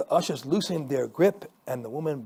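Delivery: ordinary delivery, nothing marked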